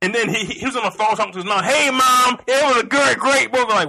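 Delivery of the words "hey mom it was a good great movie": loud, drawn-out, oblivious casual chatter. Retelling a moviegoer on the phone to his mom: imitating a loud moviegoer. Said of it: "Why are you so fucking loud?".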